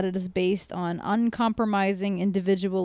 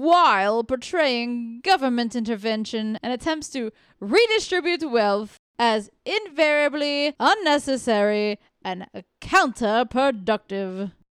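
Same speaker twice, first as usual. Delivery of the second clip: prim, very proper put-on voice; 4 semitones higher than usual. Asked to read a passage aloud for the panel: very proper voice. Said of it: "That's very proper".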